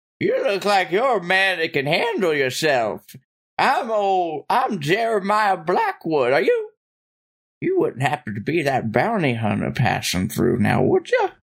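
swooping, animated character voice with swinging pitch. Playing a stranger who walks through the door in a bar scene, Jeremiah Blackwood character voice. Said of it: "That's not his voice. Hold on, here we go".

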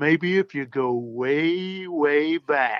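deep, very slow voice with words drawn out long.

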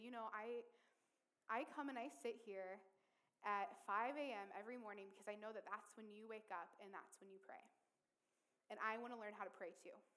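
ordinary talk

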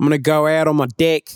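put-on Australian accent. Comparing how an Australian and a New Zealander would say it, Australian accent. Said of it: "an Australian would be like".

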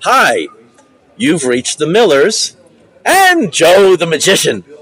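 bad, high, slow, loud, drawn-out mock voice.

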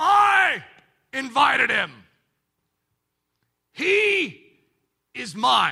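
very loud, very slow booming voice. Voicing the king in a retold scene: booming voice. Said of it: "suddenly you hear the booming voice".

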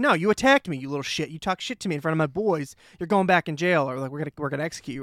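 ordinary talk, nothing marked

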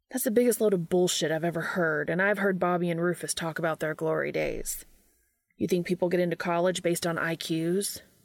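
ordinary delivery

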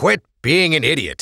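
loud, high, spat-out words. Narrator reads Kotuk answering the one who called him a ghost, spat. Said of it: "Kotuk spat".

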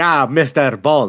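imitated villain's Portuguese accent. Imitating how a movie character says a line: imitating the villain's Portuguese accent. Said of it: "his accent".

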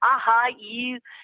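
put-on slight North Carolina accent. Parent recalling how their young daughter from North Carolina used to talk: little North Carolina accent. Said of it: "With her little North Carolina accent".

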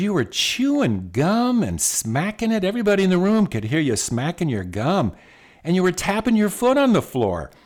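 high-pitched, blunt, laid-on-thick delivery. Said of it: "She goes".

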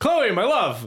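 beaming, very high, joyful cry of delight. Narrator voices a man greeting the nymph Chloe on the stairs: beaming shout. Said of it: "beams and shouts".

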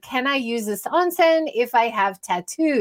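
ordinary delivery

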